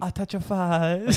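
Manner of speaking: put-on very high-pitched baby-talk voice. Retelling a man on a tram FaceTiming his baby: imitating a man's baby talk. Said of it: "we're just doing him".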